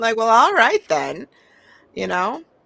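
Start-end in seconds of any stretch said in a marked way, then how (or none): 0.2-1.3 sarcastic, cutting, snarky delivery with raised voice. Showing how they read the poem line differently: snarky reading. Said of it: "I read it very snarky".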